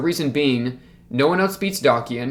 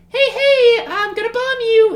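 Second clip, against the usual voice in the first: very high fake voice, drawn out; 7 dB louder than usual. Retelling what a woman said after pulling up the phone, in a high-pitched fake voice. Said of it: "in her high pitched like you know fake voice".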